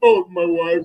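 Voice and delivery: put-on tearful, breaking-down sobbing voice. Mocking a basketball player for crying about his wife: mock crying. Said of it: "crying at the end".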